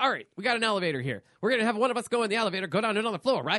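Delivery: rapid-fire speech. Retelling a movie plan scene, imitating James Woods talking fast. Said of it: "James Wood says it so fast".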